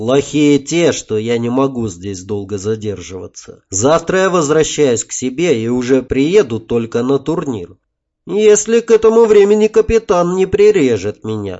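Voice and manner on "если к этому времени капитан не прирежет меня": ordinary delivery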